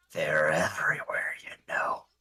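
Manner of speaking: low quiet character voice. As Gocha walks off, Olmos leans in close to Sylph, Olmos leaning in close. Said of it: "leans in real close to Sylph and goes".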